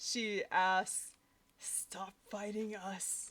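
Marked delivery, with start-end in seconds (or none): 1.6-3.3 warped, distorted voice, quieter. A character tries to talk an attacker out of fighting, in her distorted voice. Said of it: "In her distorted voice".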